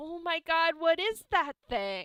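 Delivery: high-pitched put-on teenager voice. Voicing a startled teenager at a school: put-on teenager voice. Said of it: "teenager is like".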